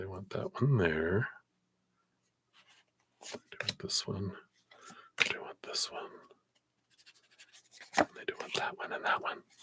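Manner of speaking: hushed whisper. Laying out cards for a reading, whispering. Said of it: "I don't know why I'm whispering".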